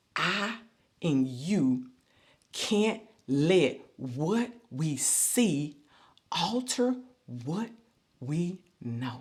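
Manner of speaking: very slow, halting delivery, broken into pieces. A speaker slows down so listeners can take the point in, very slow. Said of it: "I'm going to say it real slow".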